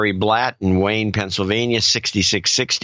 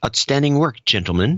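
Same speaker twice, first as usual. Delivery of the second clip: fake British-accented voice; 4 semitones higher than usual. Host thanking supporters reads one listener's message in a British accent. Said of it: "And he says it in a British accent".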